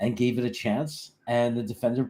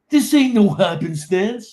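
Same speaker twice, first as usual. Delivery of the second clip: very high, very loud wrestler-style yell; 9 semitones higher, 9 dB louder than usual. Recalling Green Bean yelling up there last year, do his line as a Green Bean yelling impression. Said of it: "Didn't he do his no happenstance line?".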